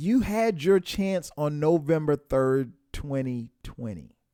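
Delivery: slow, deliberate, spelled-out delivery.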